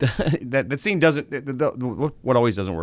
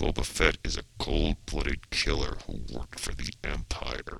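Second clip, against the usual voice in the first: put-on voice through clenched teeth, lower and quieter; 9 semitones lower, 9 dB quieter than usual. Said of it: "He has his teeth together".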